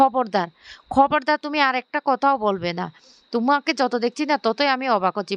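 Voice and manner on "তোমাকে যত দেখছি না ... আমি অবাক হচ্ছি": ordinary delivery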